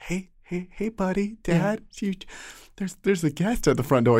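very high, tender, gentle coaxing voice. Retelling waking Dad at three for a guest: imitating own very gentle voice. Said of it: "It was the most gentle".

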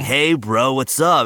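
put-on American surfer-dude, surfer-bro voice. Speaker mocks how American actors voice Italians, imitating a surfer bro. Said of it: "they sound like surfer bros".

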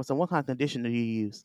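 close, hushed, secretive half-whisper. Retelling what a man half-whispered in their ear during a visit: imitating someone half-whispering. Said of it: "he gonna whisper on my ear to me".

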